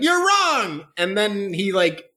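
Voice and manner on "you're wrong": shrill, very high, sudden yell. Describing a funny scene where Gon yells, retelling Gon's yell. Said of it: "he yells like".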